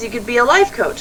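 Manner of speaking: usual speaking voice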